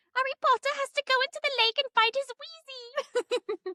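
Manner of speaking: squeaky elf voice, pitched very high. Speaker announces their best Dobby impression for the students, then does a Dobby impression. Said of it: "I'm going to try to do my best Dobby impression".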